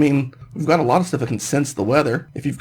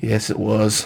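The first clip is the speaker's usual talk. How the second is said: low, let down, disappointed tone; 5 semitones lower than usual. Answering a question about a show they watched together, disappointed. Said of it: "You sound so disappointed in yourself".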